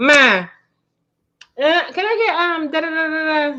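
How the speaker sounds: put-on slow, high childlike voice.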